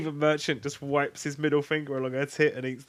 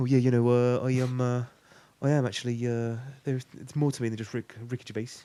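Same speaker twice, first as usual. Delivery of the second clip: put-on Bristol accent; 3 semitones lower than usual. Imagining how an actor would talk in a role: Stephen Merchant impression in Bristol accent. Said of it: "All I can see Stephen Merchant doing is just going like".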